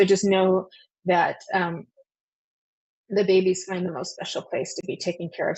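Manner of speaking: welling up, a little emotional, reassuring tone. The speaker reassures listeners and is getting a little emotional. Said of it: "I get a little emotional with that too".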